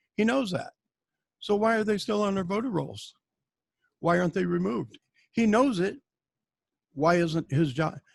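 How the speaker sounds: ordinary delivery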